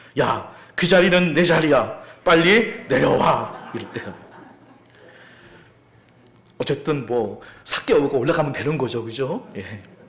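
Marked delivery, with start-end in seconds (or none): 0.2-3.7 loud, slow mock shout. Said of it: "이렇게 외쳤습니다".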